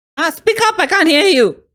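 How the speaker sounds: yelling pitched very high, shrill. In a role-play scene, telling another character to speak up: yelling. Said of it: "Can you stop yelling?".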